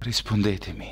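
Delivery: hushed whisper. Narrator reads a woman's line as she touches his shoulder, whispering. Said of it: "sussurrò lei".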